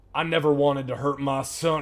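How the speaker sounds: looming creature voice, monster-like. Voicing a creature as it looks down at a player: voicing the monster. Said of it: "as it looks down at you and goes".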